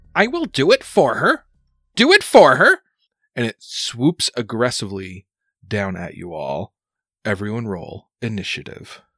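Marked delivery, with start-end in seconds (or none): 0.1-2.7 shrill witch-crow voice, much higher. Narrating a game, the speaker voices the witch crow swooping down, shrill crow voice. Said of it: "you can hear its uh shrill voice and it's saying".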